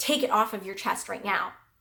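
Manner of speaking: put-on very sharp tone. Retelling what a flight attendant said about her bag: imitating a very sharp tone. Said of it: "very sharp in her tone".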